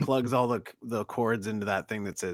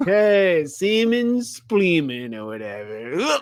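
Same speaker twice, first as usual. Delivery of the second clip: put-on very high, loud, slow, drawn-out drunk voice; 9 semitones higher, 8 dB louder than usual. Showing the drunk voice they practiced out loud while watching: drunk voice. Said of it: "practiced my drunk voice out loud".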